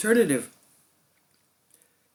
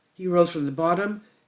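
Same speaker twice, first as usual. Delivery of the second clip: ordinary talk, nothing marked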